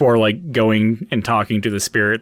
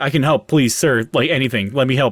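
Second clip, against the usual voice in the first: acted nervous, anxious pleading; 3 semitones higher than usual. Speaker acts out a character rushing up offering help: acting out anxious pleading. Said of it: "almost like anxiety level".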